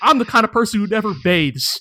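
ordinary talk

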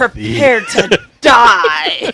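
put-on threatening old English style. Voicing Bree walking in to confront the wizard: threatening challenge in old English. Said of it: "so Bree gets all threatening and stuff".

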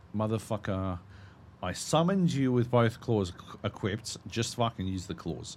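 normal talking voice

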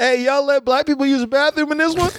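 put-on shrill yell, very high, carrying. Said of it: "come in yelling".

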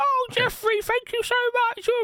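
put-on very high old granny voice. Walking listeners through the bit, speaker voices their grandma in a grandma voice. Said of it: "insert name here of your grandma and her voice".

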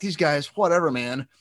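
put-on mild whining. Retelling complaining at a concert to another speaker: imitating his own whining. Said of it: "I was kinda whining".

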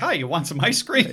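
cheerful, high ice cream truck driver voice. Acting out an ice cream truck driver's greeting: cheery ice cream truck driver. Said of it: "how an ice cream truck driver would be like".

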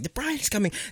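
put-on high, screaming child's voice. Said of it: "scream at the top of my lungs".

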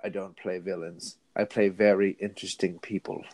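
low, soft, dark voice. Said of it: "he went all dark and went".

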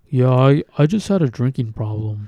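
mock no-big-deal blandness, flat, unbothered tone. Imitate the way he said everything, in a put-on bland monotone. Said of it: "bland, like, monotone".

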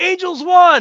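loud high-pitched yelling. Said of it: "some guy in the crowd jumps up and yells".

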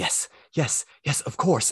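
gushing, overwhelmed eager voice. As Glorfindel, meeting the blue wizard again, Glorfindel overwhelmed with emotion. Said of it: "clearly swept up in the emotion".

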